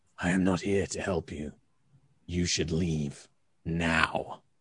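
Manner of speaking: low, quiet, rasping voice. Narrator voices a covered-up figure speaking out, in a rasping voice. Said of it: "in a kind of rasping voice".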